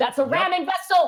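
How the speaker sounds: urgent, alarmed yell. Voicing the character Clarence spotting a ramming vessel: urgent alarmed warning. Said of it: "immediately snaps to attention".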